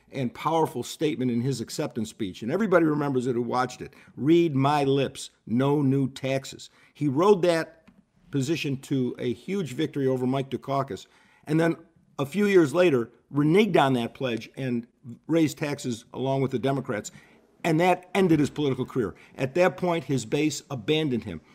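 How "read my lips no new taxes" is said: slow, very emphatic delivery. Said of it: "said very emphatically".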